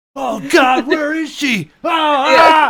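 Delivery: very high, very loud, frantic, acted-out panic. Retelling how a man searched for someone at a baggage claim carousel, mock-intense searching panic. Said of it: "make this scene the most intense thing".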